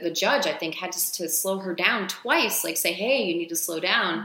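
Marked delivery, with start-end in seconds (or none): none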